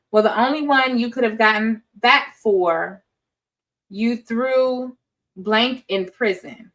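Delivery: ordinary delivery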